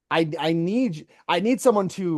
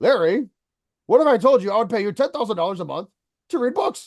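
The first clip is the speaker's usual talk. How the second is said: put-on thick German accent, spoken fast; 4 semitones higher, 4 dB louder than usual. Speaker quotes business partner Holger Spiewak's question in Holger Spiewak's thick German accent. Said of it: "Imagine a thick German accent".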